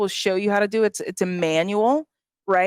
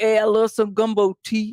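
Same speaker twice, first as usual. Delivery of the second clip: put-on local hometown accent, laid on super thick. Describing people from her hometown, she imitates them: super thick hometown accent. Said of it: "have a super thick accent".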